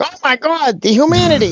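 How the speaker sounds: put-on old newsreel announcer impression. Quoting the Hindenburg announcer: Hindenburg newsreel announcer impression. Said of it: "the guy from, like, they call in the Hindenburg".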